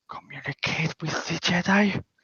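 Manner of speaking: low, hushed, mumbled whisper. Voicing Sonar asking the party a question: low mumbling whisper. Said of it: "whispers this low".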